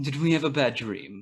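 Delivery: loud, obnoxious, jerkish character voice. Asked by the others to redo a voice, doing it again, jerk voice. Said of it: "do it again".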